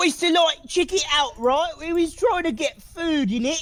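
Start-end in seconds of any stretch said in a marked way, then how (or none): 1.8-3.6 put-on Cockney accent, rat character voice. Asked to redo the Cockney Rats impression, Cockney Rats voice. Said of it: "your impression of the Cockney Rats".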